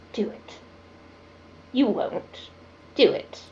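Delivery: barely audible whisper, right up close. Voicing a character nose to nose with another: whispering. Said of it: "he just kinda whispers".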